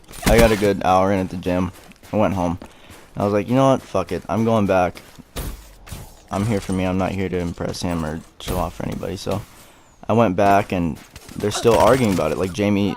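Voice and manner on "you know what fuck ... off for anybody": normal talking voice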